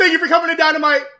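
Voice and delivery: excited, high-pitched and rushed. Show the others how Tony Khan talks when excited, in an excited Tony Khan impression. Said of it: "He just talks like this".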